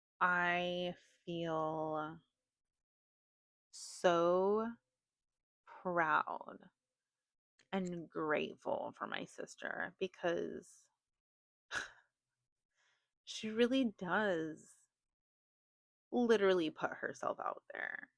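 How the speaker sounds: choked-up, emotional, close to tears. Speaking on the internet about her sister, getting emotional. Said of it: "I'm getting emotional".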